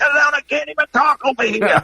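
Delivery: high mock scream, loud enough to carry across a room.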